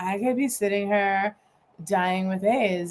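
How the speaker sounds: mock deadpan, flat, put-on delivery. Speaker retelling what a woman said about herself, imitating a deadpan delivery. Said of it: "with this great deadpan".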